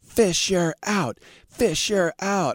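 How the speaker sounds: play-acted shrill, very high scream. Retelling how a drunk girl in a parking lot screamed in the speaker's face, imitating someone screaming. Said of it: "started screaming in my face".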